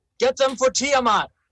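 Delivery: shouting. Yelling in character to a crowd before slinking away: yelling in character. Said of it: "So he yells out".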